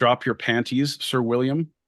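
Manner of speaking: ordinary delivery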